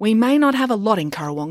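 proud, declaring tone. Answering a question about the town's next festival, said proudly. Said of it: "said Matilda proudly".

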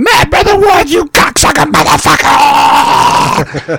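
put-on very high, very slow, drawn-out toothless old man voice. Retelling a toothless old man yelling at him: imitating a toothless old man. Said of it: "this toothless old man going".

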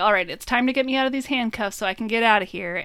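ordinary delivery

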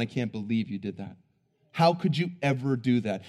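put-on condescending tone. Acting out an imagined onlooker looking down on someone, mock-condescending. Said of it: "condescendingly looking down going".

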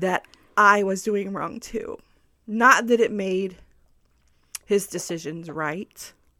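choked-up, tearful voice welling up with tears. Telling a listener about your marriage, about to cry again. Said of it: "I'm going to cry again".

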